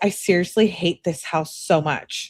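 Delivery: ordinary talk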